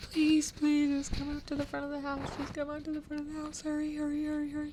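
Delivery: very high, mock crying with screaming panic. Retell the panicked call asking you to come out front, imitating Dan crying and screaming. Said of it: "like crying and screaming and saying".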